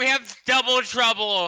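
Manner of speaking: loud, high-pitched yelling. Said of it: "I yell back to Olaf".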